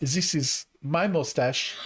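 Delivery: slow, fake, put-on German accent. Doing the only German accent they can, from a scene: put-on German accent. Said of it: "that's the only German accent I could do because of that scene".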